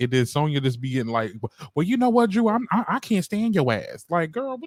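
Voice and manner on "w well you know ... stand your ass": high, play-acted stammering, stumbling angry voice. Retelling how Sonya answered Drew in a sit-down: imitating Sonya getting mad. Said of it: "She got mad as hell".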